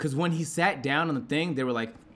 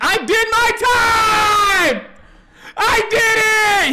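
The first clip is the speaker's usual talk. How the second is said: put-on sobbing near-scream, very high and very slow; 10 dB louder than usual. Retelling how the man protested being held: imitating crying, borderline screaming. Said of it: "crying, borderline screaming".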